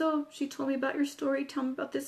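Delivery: ordinary delivery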